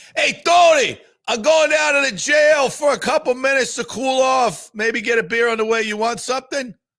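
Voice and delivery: very high, loud, bad fake Philadelphia accent. Joking about going down to the jail to cool off: bad put-on Philadelphia accent. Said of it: "the worst Philadelphia accent I've ever heard".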